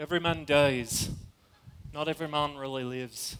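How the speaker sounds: soft, very low, bad Scottish accent. Quoting William Wallace's line from the movie to listeners tonight, in a bad William Wallace impression. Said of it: "That's terrible. I'm sorry, but we just try it in a normal English accent".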